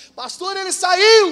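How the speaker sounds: incredulous, high, slow and loud.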